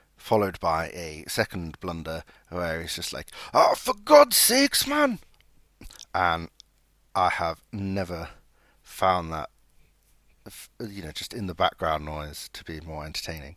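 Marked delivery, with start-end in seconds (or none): 3.5-5.2 put-on thick Geordie accent, very high and loud. Retelling what Ritchie says after a second blunder, Ritchie's thick Geordie accent. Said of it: "in his thick Geordie accent".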